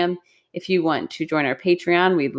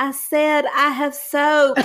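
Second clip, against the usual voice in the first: put-on country drawl, pitched way up, slow; 10 semitones higher, 3 dB louder than usual. Retelling a little girl's reply after spitting out soap: imitating a country accent. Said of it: "She's just so country".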